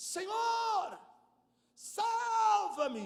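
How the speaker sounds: high, loud, desperate cry.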